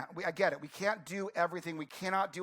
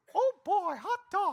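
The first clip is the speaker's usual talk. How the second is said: very high, slow, squeaky cartoon voice; 13 semitones higher, 5 dB louder than usual. Showing off that they can do a Mickey voice too: Mickey voice. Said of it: "I could actually do a Mickey voice too".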